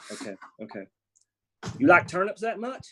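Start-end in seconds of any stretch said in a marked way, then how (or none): 1.8-2.9 loud, raised, put-on Southern accent. Playing Gris Jones, speaking to the other character in a Southern accent. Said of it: "Gris Jones is going to have a Southern accent".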